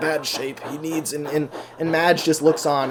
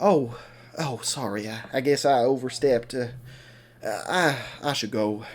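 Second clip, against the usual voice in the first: put-on sad, sorry-sounding tone; 3 semitones lower than usual. Recapping a story where a character gets upset and leaves, acting out a sad apology. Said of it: "Madge gets really sad".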